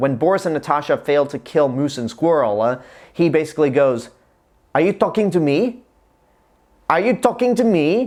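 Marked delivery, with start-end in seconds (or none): 4.7-8.1 put-on corny, hammy German accent, pitched up. Describing an embarrassing movie scene, quoting Robert De Niro's corny German accent. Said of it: "in that really corny German accent".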